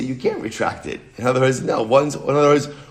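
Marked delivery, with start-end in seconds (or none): none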